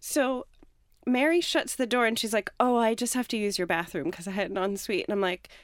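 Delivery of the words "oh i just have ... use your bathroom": ordinary talk, nothing marked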